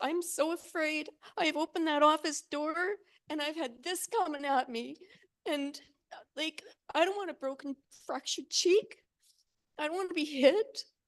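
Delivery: tearful, crying while speaking. A speaker apologizes for crying mid-statement, crying while speaking. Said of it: "I'm sorry for crying".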